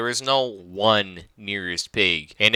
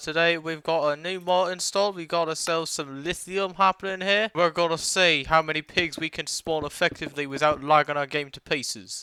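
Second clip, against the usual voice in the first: fake British accent, higher and quieter; 6 semitones higher, 5 dB quieter than usual. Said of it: "putting on a British accent today".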